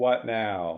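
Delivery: mock robotic voice delivery. Mocking a badly dubbed character's line: imitating a robot voice. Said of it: "she is just saying robot voice".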